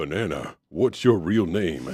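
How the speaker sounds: playful acted voice. Asking for that fun voice again, then doing it: imitating the fun voice. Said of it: "I just wanna hear that fun voice again".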